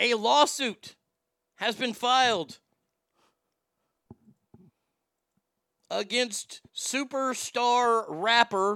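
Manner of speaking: sneer dripping off the words, snide sneering tone. Reading out a news story, the speaker uses a snide tone. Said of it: "I say that with a snide in my voice".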